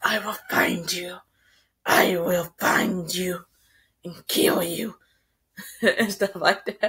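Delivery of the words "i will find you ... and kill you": low, slow, not quite convincing put-on menacing villain voice. Recounting a story, voicing the tracker's words she hears in her mind; attempted evil voice. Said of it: "I'm not good at evil voices".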